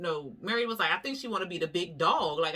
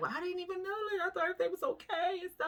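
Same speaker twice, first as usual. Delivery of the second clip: mock, very high, tearful crying voice; 12 semitones higher, 5 dB quieter than usual. Retelling how Lisa started crying: imitating Lisa crying. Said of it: "she started crying 'cause she was like".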